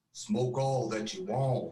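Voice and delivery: deep, low male voice with Western drawl. Retelling a voice heard on a recorder late at night on the stairs: deep male western drawl. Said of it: "in kind of like this Western drawl".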